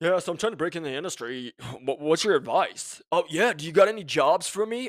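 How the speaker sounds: lazy, careless, half-hearted, low-effort tone. Imitating a networker asking for advice and jobs: imitating a lazy networker. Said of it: "'Cause you are lazy".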